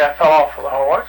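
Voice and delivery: ordinary talk, nothing marked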